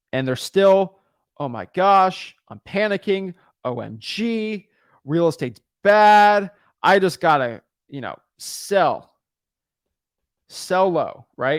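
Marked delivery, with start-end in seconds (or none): none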